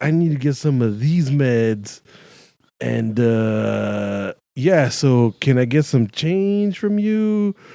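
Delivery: slow, mechanical put-on robot voice, dragged "uh". Retelling how a man showed a pill bottle and asked for change, imitating a robotic delivery. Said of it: "like all robotic".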